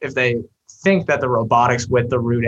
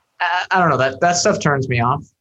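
usual speaking voice

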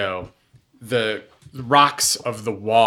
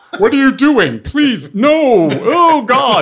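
very high, shrill, panicked yelling; 10 dB louder than usual. A game narrator voices two dwarves shouting at the players. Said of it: "two dwarves who are now shouting at you".

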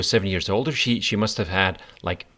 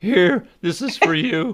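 put-on very high, slow, typical teen boy voice; 9 semitones higher, 4 dB louder than usual. Imitating a boy handing over a mixtape in a typical voice. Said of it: "With this typical voice".

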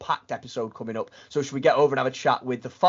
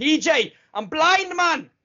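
very high, very slow, drawn-out shout; 4 dB louder than usual. Joking about what to shout at the guest: mock shouting. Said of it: "shouting at him".

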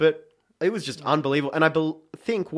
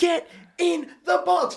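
high-pitched, drawn-out scream. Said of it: "I'm sitting there screaming at Michael Theo going".

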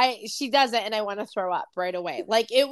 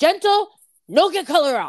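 pitched-up, loud, bossy voice; 7 semitones higher, 7 dB louder than usual. Retelling how a former boss scolded gentle shampoos: imitating a former boss. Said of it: "you imitating that was the best thing ever".

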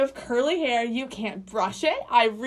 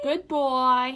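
put-on New York accent, goodbye sounding like good boy. Saying goodbye to everybody at the end: put-on New York accent. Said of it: "That was my New York".

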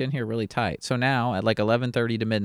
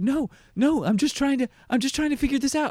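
put-on pleading, much higher and slower. Retelling Frank answering people threatening him with jail, imitating Frank pleading. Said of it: "Frank is just like pleading to them".

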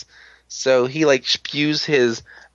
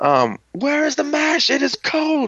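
mock, put-on yell, much higher pitched. Retelling how he keeps yelling at you over the food, imitating someone yelling. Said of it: "he's just yelling at you".

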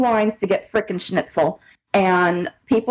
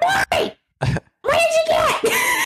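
put-on old-lady hollering, very high and drawn out. Retelling how an old lady called to her husband: imitating an old lady yelling. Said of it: "she's just yelling the whole time".

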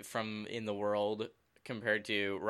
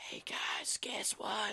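hushed, slow whisper; 12 semitones higher, 4 dB quieter than usual. Imitating a quiet teammate with a broken mic: imitating Teach whispering. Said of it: "it basically whispering".

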